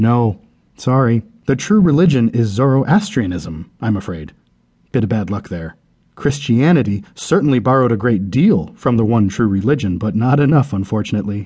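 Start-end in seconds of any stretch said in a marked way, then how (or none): none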